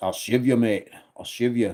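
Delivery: put-on, mock Scottish accent. Joking that the word shiv sounds Scottish: put-on Scottish accent. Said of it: "sounds like something that's, like, Scottish".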